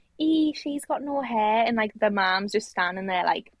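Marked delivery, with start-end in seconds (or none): 0.2-1.7 mock child voice, high, drawn-out, unfiltered blurting shout. Retelling what a stranger's kid shouted in the supermarket, imitating a kid shouting. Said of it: "someone's kid shouts".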